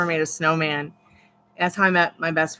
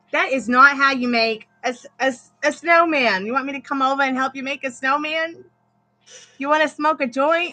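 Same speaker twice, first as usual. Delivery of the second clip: put-on Boston accent, pitched up; 9 semitones higher than usual. Retelling what a woman said to them at thirteen, in a boston accent. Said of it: "she came out with a Boston accent".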